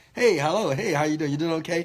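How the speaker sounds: loud, hollow, fake-nice friendly tone. Showing someone faking being nice to people's faces: fake nice greeting. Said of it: "fake being nice in people's faces".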